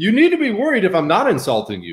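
plain

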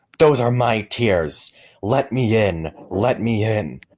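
slow, loud, drawn-out yelling. A man at the front door, refused entry by those inside: shouting. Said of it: "The man at the door shouted".

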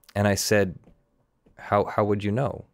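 ordinary talk

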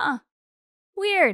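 mock smirking, offhand tone. Retelling how Grant answered on a call, acting out Grant smirking.

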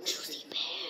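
soft, hopeful whisper.

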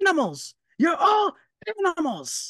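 acted-out angry tirade, very high, very slow, drawn-out. Doing an impression of a dad from growing up: imitating a dad yelling. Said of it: "this is an impression of my dad growing up".

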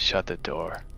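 very quiet, barely audible whisper. Playing a character telling another to shut the door: whispering in character. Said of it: "L R whispers over his shoulders".

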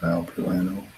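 soft, small, quiet voice.

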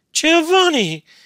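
very high, loud, thunderstruck exclamation. A woman exclaims after a man's furious outburst at her. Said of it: "exclaimed Beatrice".

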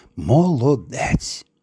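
very faint, barely audible. The grandmother comes to the cradle and takes out the doll: barely audible. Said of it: "ледь чутно промовила".

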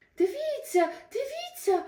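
very high, abrupt, sudden exclaiming cry. Narrator reading Ilchyk interrupting his mother's story, exclaiming suddenly. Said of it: "раптом вигукнув Ільчик".

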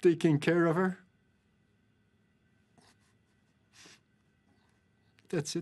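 voice catching with emotion. A man describes how he tried to convince his wife not to, choked up. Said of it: "(chokes up)".

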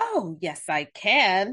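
very slow, drawn-out, puffed-up proud boasting. A narrator reads Wolf answering Bear's request for help, speaking proudly. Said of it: "Wolf proudly said".

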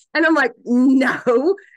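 ordinary talk

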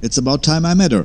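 high, fast, eager tone.

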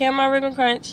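ordinary talk, nothing marked

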